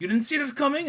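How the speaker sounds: put-on Russian accent, pitched very high. Retelling an actor's movie line in a fake Russian accent. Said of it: "put on, like, a fake Russian accent".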